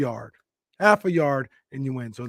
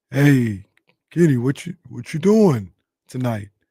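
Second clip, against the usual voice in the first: loud, slow, unhurried, plodding speech; 7 dB louder than usual. Retelling how Mark invited him out, imitating Mark's slow talk. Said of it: "Kind of talked kind of slow".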